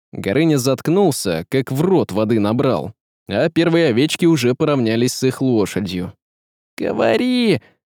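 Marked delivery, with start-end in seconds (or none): 6.8-7.6 sharp, urgent hiss, very high. As a herd approaches, one man urges his companion to speak: hissed. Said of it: "зашипел Василий".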